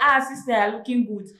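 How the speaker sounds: plain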